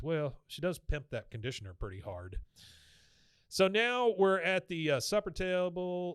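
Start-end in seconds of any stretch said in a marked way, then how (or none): none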